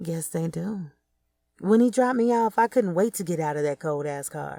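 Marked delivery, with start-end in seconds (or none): 0.0-0.9 put-on, mock-seductive sexy voice. Recounting a ride in a cold car, repeating a reply: retelling a sexy voice. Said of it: "I said in my sexy voice".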